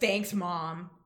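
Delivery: put-on dismissive tone. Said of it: "he's kinda dismissive".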